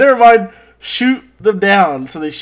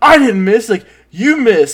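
angry, indignant, pissed-off voice; 3 semitones higher, 4 dB louder than usual. Retelling a cartoon scene to another speaker: imitating Blue pissed off. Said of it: "Blue is super pissed off".

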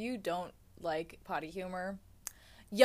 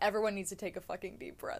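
ordinary delivery

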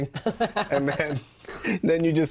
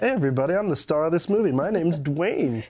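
dopey, goony put-on voice; 2 semitones higher than usual. Joking about the name Dwayne, imitating Dwayne Johnson: goonier Dwayne Johnson voice. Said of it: "goonier by changing his voice".

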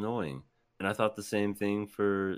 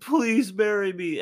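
acted, very high-pitched, loud, blubbering begging sob; 12 semitones higher, 8 dB louder than usual. Retelling how a character acted early on: imitating Zenitsu crying and begging. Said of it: "just crying and begging".

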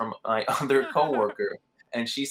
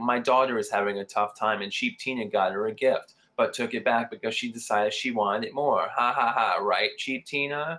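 usual speaking voice

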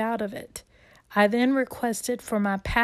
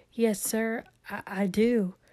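put-on small, trembling, shaky voice, very slow; 3 dB quieter than usual. Retelling answering the pastor at baptism, imitating own shaky little voice. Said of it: "In my shaky little voice".

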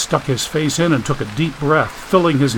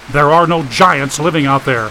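ordinary delivery

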